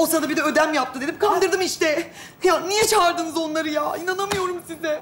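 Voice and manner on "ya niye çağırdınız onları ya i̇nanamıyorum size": tearful, furious, angry crying outburst. Confronting family for calling others in about a hidden pregnancy: crying from anger. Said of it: "Sinirden ağlıyorum".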